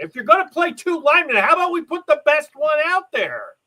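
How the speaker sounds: mock very high, shrill screaming. Speaker retells sitting at home watching the game: retelling screaming at the TV. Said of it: "I'm sitting there screaming at the T V".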